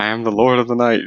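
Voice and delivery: grandiose, proclaiming cartoon villain voice. Imitating Scarecrow being dragged in by Batman and Robin: Scarecrow screaming. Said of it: "he's just screaming".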